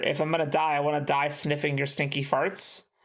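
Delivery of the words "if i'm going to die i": usual speaking voice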